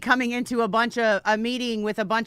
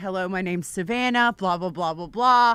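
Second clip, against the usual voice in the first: imitated very official, formal tone, lower pitch; 4 semitones lower than usual. Retelling walking up to meet someone: imitating own very official tone. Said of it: "I was very official and I was like".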